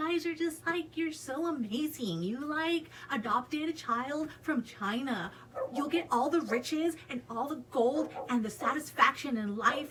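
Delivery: play-acted, gushing, fawning, pandering flattery. Imitating how certain people gush at the audience, in a mock-pandering voice. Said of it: "in like a pandering voice because that's how they fucking talk".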